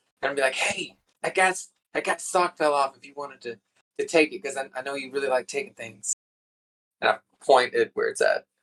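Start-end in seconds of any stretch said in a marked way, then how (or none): 0.5-6.1 hushed, close whisper right into the ear. Voicing a character whispering a tip into another's ear: whispering in ear. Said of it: "just gonna kinda whisper".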